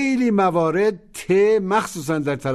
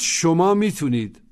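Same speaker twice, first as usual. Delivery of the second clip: usual speaking voice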